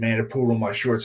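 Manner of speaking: ordinary talk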